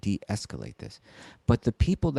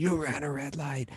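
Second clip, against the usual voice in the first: light, high-pitched mild yell; 5 semitones higher, 5 dB quieter than usual. Retelling how a man yelled at kids on bikes: imitating a man yelling. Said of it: "this guy yelling and screaming".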